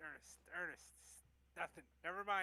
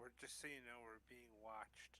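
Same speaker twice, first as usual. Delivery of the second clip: very quiet, low, hushed half-whisper; 6 semitones lower, 11 dB quieter than usual. Leaning over to Sapphire, half-whispering. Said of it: "I just kind of lean over and whisper".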